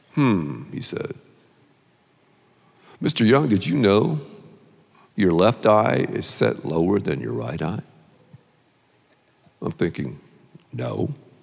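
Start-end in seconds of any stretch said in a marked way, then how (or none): 3.0-7.8 soft, quiet-spoken, close-up voice. Speaker retelling a man leaning close to his face: imitating a soft voice. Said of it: "He talks in a soft voice".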